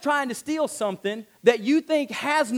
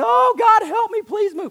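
mock very high, shrill, loud whining voice; 10 semitones higher, 5 dB louder than usual. Preaching about faith, act out someone begging God, imitating someone whining. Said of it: "you're whining".

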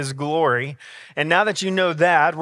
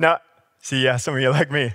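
plain

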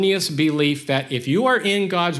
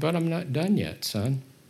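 put-on comforting tone, quieter; 6 dB quieter than usual. Speaker quoting his reply to the speaker, retelling a comforting voice. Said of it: "And he said in that comforting voice".

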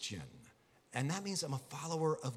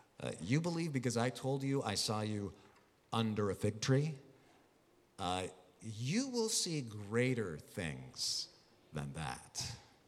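acted lightly amused, unimpressed, chuckling tone; 5 semitones lower than usual. Acting out Jesus answering Nathanael: imitating Jesus chuckling. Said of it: "You can hear him kinda chuckling when he says".

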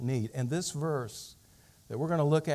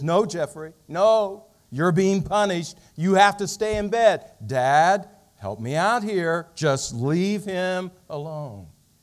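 stern, very loud telling-off; 3 semitones higher, 8 dB louder than usual. Telling a family story, the speaker quotes the boy's mother, mimicking a stern mother. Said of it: "in a stern voice".

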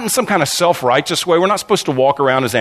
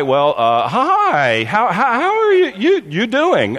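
put-on nervous boyish stammer, much higher, slower; 8 semitones higher than usual. Speaker retells freezing when asked for the good news, retelling a nervous stammer. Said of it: "started stammering a little bit, and then sounded like a 12-year-old guy".

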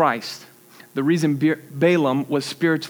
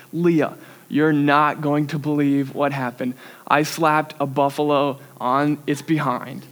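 normal talking voice

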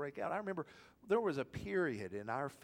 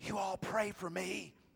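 loud, high-pitched stage whisper; 5 semitones higher than usual. Retelling what Doug said while walking down the aisle, in a retold loud whisper. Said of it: "in a loud whisper said".

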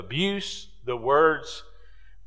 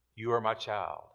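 soft, hushed half-whisper under the breath; 4 semitones lower, 8 dB quieter than usual. Preaching about listening to God's half-whisper, showing it: half-whispering.

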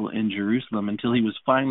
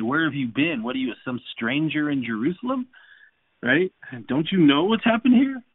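mocking, needling tone; 5 semitones higher than usual. Retelling a traveller's reply to the questioning stranger: imitating a mocking tone. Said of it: "he basically is almost in a mocking way".

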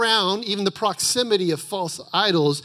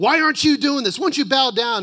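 mock enraged king's tirade, high-pitched and furious; 5 semitones higher than usual. Speaker retells the king yelling at those who won't bow: retelling an enraged yell. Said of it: "he goes into this fit of rage and he yells at him like".

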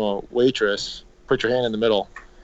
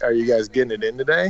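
plain

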